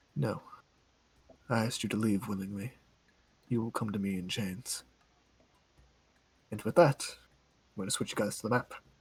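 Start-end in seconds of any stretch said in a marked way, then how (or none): 0.2-4.9 gentle, soft, icy, hushed tone. A familiar voice answers a player's offer to come willingly, in a soft cold voice. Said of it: "a soft and familiar cold voice".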